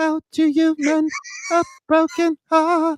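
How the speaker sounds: hushed, high, slow, drawn-out half-whisper. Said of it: "Like in a whisper almost".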